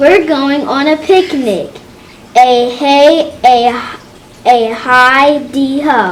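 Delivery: expressive, loud, excited, exclamatory reading. Showing a listener how to read exclamation points, reading excitedly. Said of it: "I want you to try that again".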